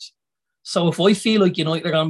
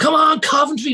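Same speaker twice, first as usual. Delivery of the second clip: very high-pitched, loud shouting; 11 semitones higher, 4 dB louder than usual. Recalling watching football matches, re-enacting a yell at the screen: imitating shouting at the TV. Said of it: "when you're shouting at the screen".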